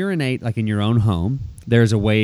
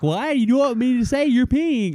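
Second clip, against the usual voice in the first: put-on screaming child voice, much higher, faster; 13 semitones higher than usual. Dad retelling his six-year-old questioning him outside, imitating a screaming child. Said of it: "She's like screaming".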